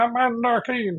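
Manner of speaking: shrill, high-pitched newsreel announcer voice. Recreating how you read the start of Commander Keen to them, use a Walter Winchell newsreel voice. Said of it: "in a kind of a Winch- Wal- Walter Winchell uh, sort of newsreel voice".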